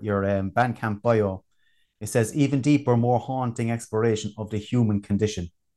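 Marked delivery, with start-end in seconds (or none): none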